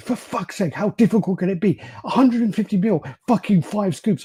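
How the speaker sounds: shrill, high, fed-up, exasperated furious shout. Retelling how a woman shouted down the stairs at him, retelling an angry shout. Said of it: "she shouts down the stairs again".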